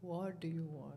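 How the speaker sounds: very sweet, soft and low, barely above hush. Retelling a meeting with Baba, quoting him imitating a very sweet tone. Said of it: "Very sweetly".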